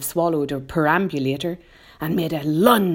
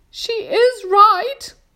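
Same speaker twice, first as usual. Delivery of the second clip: shrill, very high, loud shout; 6 dB louder than usual. Reading a story aloud, voicing the Ladybird answering Miss Spider: Ladybird shouting. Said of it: "shouted the ladybird".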